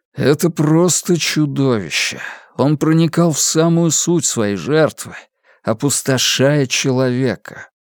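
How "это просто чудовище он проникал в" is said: usual speaking voice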